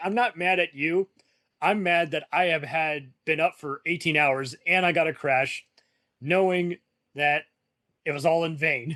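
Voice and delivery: ordinary talk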